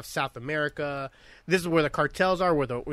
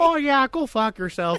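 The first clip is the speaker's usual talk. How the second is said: very high, raised, polite-sounding Canadian accent; 10 semitones higher, 5 dB louder than usual. Joking how rude words would sound in that accent: imitating that polite-sounding accent. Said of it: "they could tell me to fuck off in that accent".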